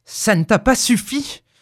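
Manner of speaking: fierce growl, growling fiercely. A husband answers his wife's talk of the other two wishes: fierce growl. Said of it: "gronda-t-il d'une voix farouche".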